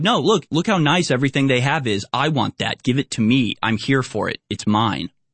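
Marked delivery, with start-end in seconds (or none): none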